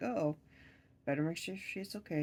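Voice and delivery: plain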